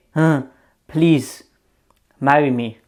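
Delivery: slow, drawn-out pleading beg. Mocking men who kneel and propose: imitating a man begging. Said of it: "they're just begging".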